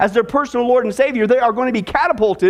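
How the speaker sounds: ordinary delivery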